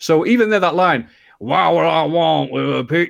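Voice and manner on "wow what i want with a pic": put-on American hillbilly accent, higher. Quoting a cartoon voice line: Bret Hart's American hillbilly voice. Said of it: "why are you talking like an American, like, hillbilly type".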